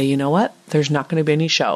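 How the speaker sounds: plain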